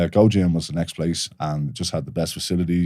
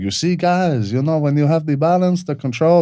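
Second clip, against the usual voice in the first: terrible fake Brazilian accent, very high-pitched; 10 semitones higher, 5 dB louder than usual. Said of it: "That's a terrible Brazilian accent".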